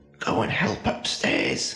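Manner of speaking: hissing with swooping pitch. Narrator reads a man hissing at the other men in the room: hissing. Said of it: "he hissed at them".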